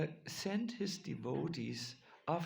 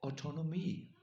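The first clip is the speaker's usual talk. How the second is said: the word autonomy said with French accent. Announcing a difficult word before saying it, French accent on autonomy. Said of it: "I will say it with a French accent".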